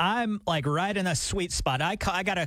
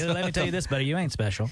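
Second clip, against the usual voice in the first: ordinary delivery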